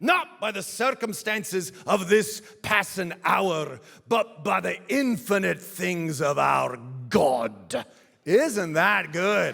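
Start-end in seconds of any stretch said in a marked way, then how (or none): 0.0-7.9 put-on Scottish brogue, higher and louder. Reading aloud a quote from a sermon: put-on scottish brogue. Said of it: "imagine him doing this in his Scottish brogue".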